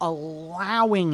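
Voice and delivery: strong emphasis on "allowing". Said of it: "I'm gonna put an emphasis on it".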